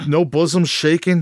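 normal talking voice

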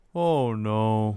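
flat, emotionless deadpan with zero feeling. Retelling Saturn's reply on hearing he must wear a dress: imitating Saturn with no emotion. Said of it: "No emotion at all".

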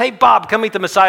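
very loud, very high-pitched hollering yell. Retelling the woman poking her head in windows: imitating someone yelling. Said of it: "yelling at the top of her voice".

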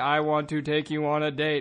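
robot-like, flat, slow monotone drone. Showing how to ask her on a date, in a flat monotone. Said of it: "Preferably not monotone like I just did".

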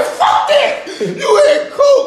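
high, laughing delivery. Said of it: "And I'm like".

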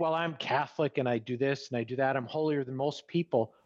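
ordinary talk

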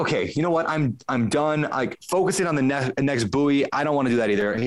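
ordinary talk

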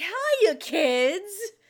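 high, loud goofy cartoon voice, words stretched. Speaker describing fun side characters who mostly serve as exposition, in a goofy cartoony voice. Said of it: "these fun cartoony voices that are just like".

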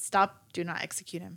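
ordinary talk

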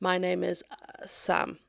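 slow, stuck, blocked stutter. Explaining the kinds of stuttering, demonstrating a blocked stutter. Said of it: "So that might sound like someone saying".

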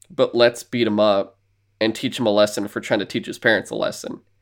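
ordinary talk, nothing marked

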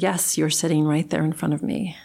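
ordinary talk

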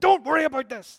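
very loud, high scolding, like a dad. Imitating a dad telling his kid off: mock-scolding tone, like a dad. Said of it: "like a dad telling their kid off".

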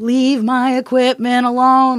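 put-on shouting. Retelling telling a woman to leave the equipment alone: imitating own shouting. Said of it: "shouting at this one".

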